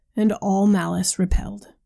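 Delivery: ordinary delivery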